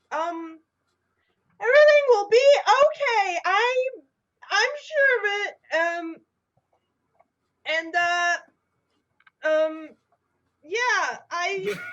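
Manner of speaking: very high, stumbling, halting, scared, forced calm. Voicing a captain keeping the panicking crew's morale up: scared but trying to sound calm. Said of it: "she's trying to keep morale up, and, but she's very scared".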